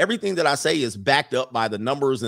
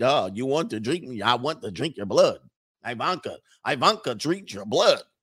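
poorly done, fake put-on Russian accent. Joking about a listener's hot Russian on air, bad Russian accent. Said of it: "I need to work on my Russian accent".

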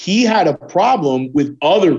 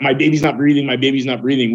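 ordinary talk

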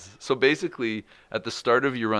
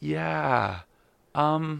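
put-on worried, concerned tone, higher pitch; 6 semitones higher than usual. Retelling a phone call with his wife, imitating Jenna's concerned voice. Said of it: "I can hear in her voice".

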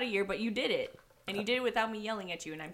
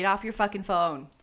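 ordinary talk

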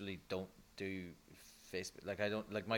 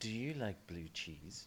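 silky, smooth radio-announcer voice; 7 dB quieter than usual. Taking a turn asking Christine a question, in a smooth announcer voice. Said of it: "this is like your smooth announcer voice now".

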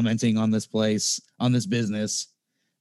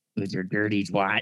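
put-on smoker voice, much quieter; 2 semitones lower, 4 dB quieter than usual. Riffing along with another speaker, doing the Fed Smoker voice. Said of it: "The Fed Smoker voice gets me".

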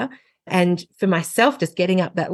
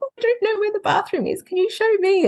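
tiny, very high, cute little donkey voice; 14 semitones higher than usual. Retelling how she voiced the donkey at toothbrushing time, in a little donkey voice. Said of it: "putting on the little voice".

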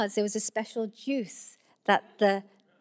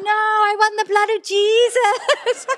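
put-on very loud, very high, whiny, insistent toddler shout; 11 semitones higher, 9 dB louder than usual. Retelling a small boy in a grocery trolley refusing his mum, imitating the toddler's demand. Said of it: "He was like".

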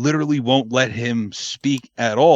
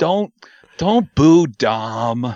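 put-on nice little voice, louder; 4 dB louder than usual. Retelling how a wrestler calmed a booing crowd: imitating Cody Rhodes' nice little voice. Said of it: "he can put on that nice little voice of his and go".

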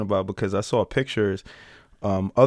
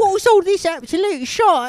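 put-on cockney-accented child voice; 5 dB louder than usual. Imagining an american couple's child who speaks with a cockney accent. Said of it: "speaking with like a cocky accent".

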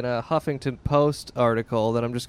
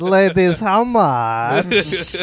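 loud, high, over-the-top put-on Kazakh accent; 6 semitones higher, 7 dB louder than usual. Retelling chatting up some ladies: Borat impression. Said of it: "with my Borat impression".

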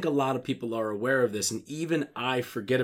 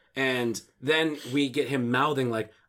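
usual speaking voice

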